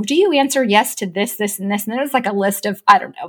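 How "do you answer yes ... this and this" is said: ordinary talk, nothing marked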